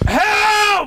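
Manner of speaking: put-on shouting. Retelling being locked in and shouting through the door: imitating own shouting for help. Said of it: "Started banging on this door".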